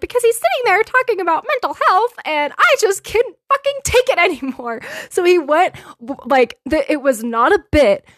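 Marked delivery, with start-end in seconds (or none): 0.0-4.8 put-on very high, fast, rattled-off childlike voice. Retelling why a comedian strangled a puppet on TV, in the Elmo voice. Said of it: "in the Elmo voice".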